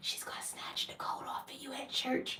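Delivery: very soft whisper, barely audible. Retelling what a sister kept saying about church clothes: imitating a whisper. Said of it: "my sister kept whispering".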